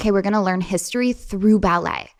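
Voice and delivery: plain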